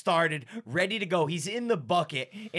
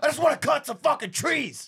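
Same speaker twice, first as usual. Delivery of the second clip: acted, worked-up angry voice, pitched up; 8 semitones higher, 4 dB louder than usual. Retelling what an angry coworker said about the job: imitating a mad coworker. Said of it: "He's all fucking mad and shit".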